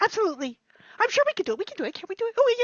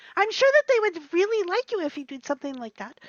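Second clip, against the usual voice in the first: ordinary talk, nothing marked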